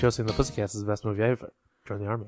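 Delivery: very fast, low, rapid-fire, words crammed together. Trying to slip a line subliminally into the show, said as fast as possible. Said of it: "I tried to say it as fast as I could".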